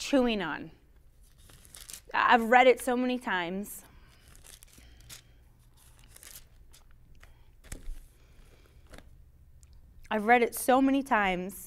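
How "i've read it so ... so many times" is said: welling up, nearly crying, tearful voice. Talking about reading the Word of God many times, tearing up. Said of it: "I don't even know why I'm tearing up".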